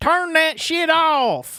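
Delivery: put-on Detroit accent, very high pitch, slow pace. Retelling a neighbor shouting about an alarm, imitating a Detroit accent. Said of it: "Typical Detroit accent".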